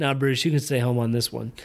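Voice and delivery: normal talking voice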